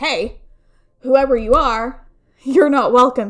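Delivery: play-acted, loud, clearly enunciated call. Telling a story, the speaker reenacts addressing whoever is there in a very loud, clear voice. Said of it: "in a very loud, clear voice".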